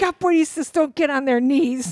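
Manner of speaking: mock high, shrill screaming. Retelling what the instructor screamed at her: imitating someone screaming. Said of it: "He's just screaming at me".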